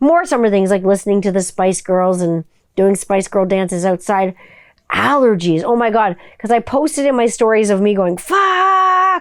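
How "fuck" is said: high-pitched yelling. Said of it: "just yelling the F word as loud as I could".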